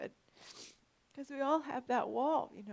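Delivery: high, tearful voice, crying through the words. Apologizing without knowing why you are in tears, keep talking about the wall, crying. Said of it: "I don't know why I'm crying".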